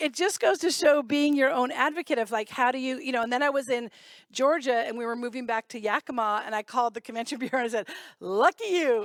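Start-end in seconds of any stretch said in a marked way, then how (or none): 8.2-9.0 put-on Southern American accent. Retelling a call to a convention bureau, speaker uses a fake Southern accent. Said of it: "in my s- fake Southern accent".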